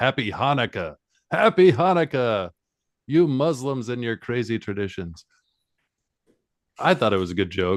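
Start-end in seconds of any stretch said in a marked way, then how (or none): 0.0-5.2 fake Jamaican accent, called out. Retelling a character's line as he bursts into a party: imitating Mystic Mark yelling. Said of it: "and he yells".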